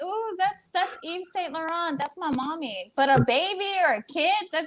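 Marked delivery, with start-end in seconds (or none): 0.0-2.9 voice of a dog. Acting out what her dog would say on smelling her: imitating her dog. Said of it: "He like that".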